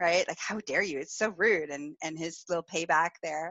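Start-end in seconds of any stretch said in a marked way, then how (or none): 0.4-1.7 playful fake outrage, angry huff. Retelling a partner's reaction during a game: imitating fake anger. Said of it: "fake angry".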